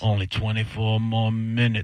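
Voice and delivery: put-on inner demon voice. Speaker retells counting down the minutes of a bad shift, inner demon voice. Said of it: "I got my inner demon voice going".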